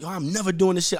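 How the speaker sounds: devastated, high, hurt scream. Retelling a call to a friend: imitating his own scream. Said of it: "I screamed at him".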